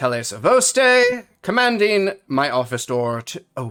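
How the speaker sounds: loud, commanding, authoritative delivery. Voicing Tele at the office door: Tele's authoritative voice. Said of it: "in his best authoritative voice".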